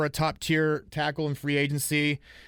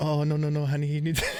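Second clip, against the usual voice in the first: put-on fussing voice in a Brazilian accent. Repeating the impression when asked to do it again: Gisele Bündchen impression. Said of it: "do it one more time".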